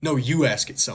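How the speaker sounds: cheeky, sassy delivery. Retelling what the spirit box answered after the speaker's sister was told to ask: mimicking a sassy reply. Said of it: "like in like a sassy voice".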